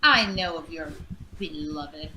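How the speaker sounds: snippy, resentful, salty and bitter delivery. Speaking in character to a foe about his beloved: salty tone. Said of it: "I say it so salty-like".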